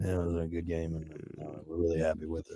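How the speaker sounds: muttered monotone, very low, very quiet, barely audible. Showing how a coach starts off when he talks: imitating Bill Belichick's mumble. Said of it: "He starts off like this".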